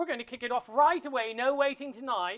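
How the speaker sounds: switching into a put-on English accent. Kicking off the show right away, switching into a put-on English accent. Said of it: "I just went from Ireland to England".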